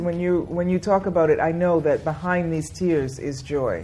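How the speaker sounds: usual speaking voice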